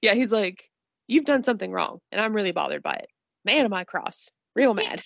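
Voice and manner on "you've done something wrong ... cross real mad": put-on calm tone, lower pitch. Recounting a scene, the speaker quotes a man: imitating someone calm. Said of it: "the way he says it is so calm".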